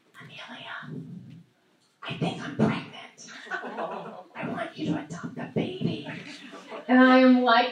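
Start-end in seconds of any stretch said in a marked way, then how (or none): 0.2-6.0 hushed, very quiet, confiding whisper. Retelling the birth mother leaning over at lunch: imitating someone whispering. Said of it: "She leans over to me and she whispers".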